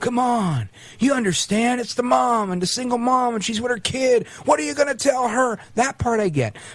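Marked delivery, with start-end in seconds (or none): 0.0-5.6 put-on whiny politician voice. Act out the kind of thing he says to people, imitating Joe Biden's whiny voice. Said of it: "when he does the whiny voice".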